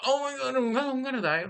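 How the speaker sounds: very high, shivering, trembling voice full of terror. Retelling her fight with the killer, acting out shivering fear.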